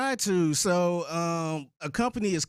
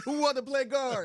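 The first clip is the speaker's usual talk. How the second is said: put-on mocking voice, pitched higher; 8 semitones higher than usual. Imitating another speaker searching for a guard: imitating Reggie. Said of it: "Reggie over there like".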